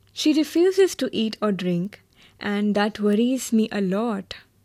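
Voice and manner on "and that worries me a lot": plain reading voice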